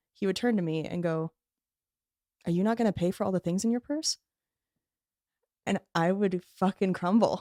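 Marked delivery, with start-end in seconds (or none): 2.4-4.2 mock bone-dry, expressionless, fast, flat deadpan. Retelling what he said to her at the pharmacy checkout, imitating his deadpan. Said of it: "just deadpan the way he does".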